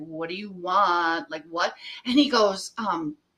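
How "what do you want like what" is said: put-on scared, fearful voice, lower pitch. Retelling own reply to a stranger on the phone: retelling own scared reply. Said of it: "Now I got scared".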